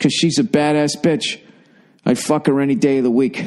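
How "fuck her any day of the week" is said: ordinary talk, nothing marked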